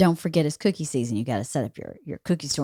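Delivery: very quiet, low-pitched hushed murmur. Retelling what they said to a Girl Scout after finishing chewing: retelling a very quiet remark. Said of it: "I very quietly said".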